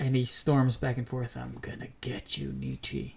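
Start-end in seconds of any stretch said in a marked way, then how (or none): 1.4-3.1 very quiet, deep, guttural, throaty menacing growl. Narrating a story, a character storming back and forth speaks in a deep, guttural voice. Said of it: "He says in a deep, guttural voice".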